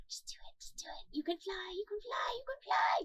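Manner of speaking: soft, whispery little voices. Imagining voices from the stone speaking to Mister Paris, little voices whispering. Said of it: "little voices from the stone whispering".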